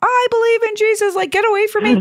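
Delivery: put-on, very high screaming in fright. Retelling a scary dream, recalling what was screamed: imitating someone screaming. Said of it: "I was screaming".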